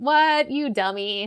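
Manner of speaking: acted-out sassy tone. Retelling how two travelers answer Jesus on the road: imitating a sassy retort. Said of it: "they kinda sass him".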